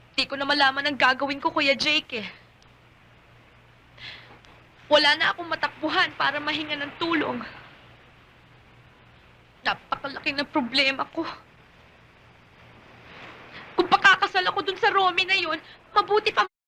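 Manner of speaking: tearful, crying while talking. Telling an older friend she sees no way out, crying while talking. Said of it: "Bakit ka umiiyak".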